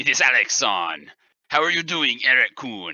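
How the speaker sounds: deep, bad put-on Japanese accent. Co-host greeting the other co-host as they take over, deep horrible fake Japanese accent. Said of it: "talking in my deep Japanese and horrible accent".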